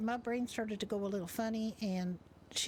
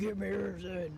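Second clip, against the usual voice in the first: very deep, dropped, bass-heavy voice; 2 semitones lower than usual. Retelling a robbery, quoting the robber in a really deep voice. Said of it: "in like a really deep voice".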